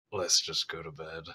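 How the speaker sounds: very low, fed-up, done-with-it mutter. In a roleplaying game, a player speaks in character to a companion in a fed-up voice. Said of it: "I'm so done with this kind of voice".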